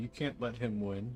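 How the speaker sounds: put-on mock crying. Mocking how a driver will complain after the race: imitating George crying. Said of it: "George will start crying".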